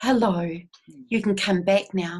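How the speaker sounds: whispering. Explaining how they speak to a person's soul essence, in a whisper. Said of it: "I'm actually whispering to their soul essence".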